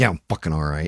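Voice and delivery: short-tempered, angry, irritable snapped reply. Recalling his wife asking if he was all right, the speaker retells snapping at her. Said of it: "Like snapped at her".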